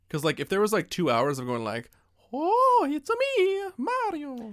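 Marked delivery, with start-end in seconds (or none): 2.3-4.5 very high-pitched cartoon voice with drawn-out words. Explaining why two hours of the original voice would get old: Mario voice. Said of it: "the original voice of Mario".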